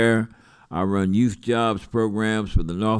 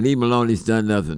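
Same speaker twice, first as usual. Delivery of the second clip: plain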